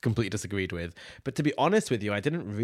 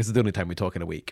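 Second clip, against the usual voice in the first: plain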